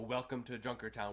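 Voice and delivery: ordinary talk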